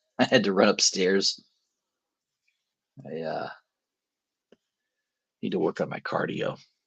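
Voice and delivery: out of breath, heavy breathing. Speaker has just run upstairs, out of breath. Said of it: "I'm breathing heavy".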